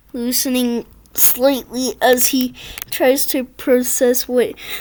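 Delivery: ordinary delivery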